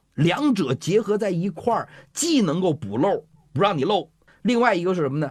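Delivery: worked-up, eager, excited, fast and high. A teacher explaining a health method to a listener, excited. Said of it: "老师您别激动啊".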